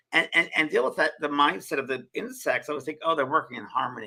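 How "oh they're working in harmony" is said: normal talking voice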